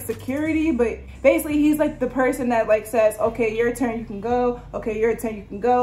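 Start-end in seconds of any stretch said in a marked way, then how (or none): none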